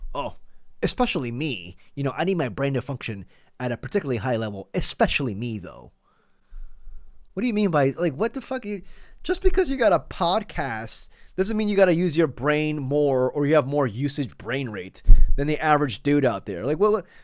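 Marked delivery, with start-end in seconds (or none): 0.1-5.9 play-acted, full-of-himself, entitled, self-important elite tone. Quoting another speaker's words back at him: imitating someone's entitled tone. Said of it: "Do you hear the entitlement in his voice?".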